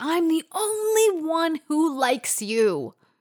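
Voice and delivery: very slow, high-pitched, stretched-out screaming. Retelling two men screaming at each other, one at the other, retelling a scream. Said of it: "he's screaming this at him".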